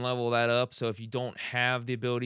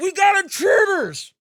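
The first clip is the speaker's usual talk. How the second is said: piercing, shrill scream, very high and very loud; 12 dB louder than usual. A game narrator voices a character reaching for a comlink, screaming. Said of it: "he screams".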